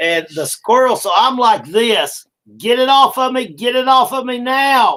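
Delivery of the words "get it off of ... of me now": panicked, pitched-up, frantic pleading tone. Retelling a squirrel jumping on them at home, retelling own screaming. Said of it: "And I'm screaming".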